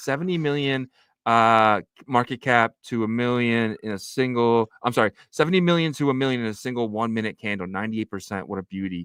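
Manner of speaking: ordinary delivery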